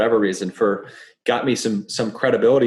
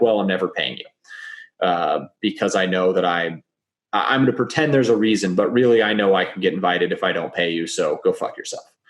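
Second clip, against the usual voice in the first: ordinary delivery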